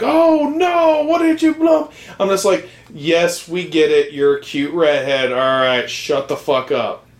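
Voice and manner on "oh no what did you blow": very high, loud, shrill outburst. Retelling what she would blurt out during the movie, really loudly. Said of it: "really loudly say".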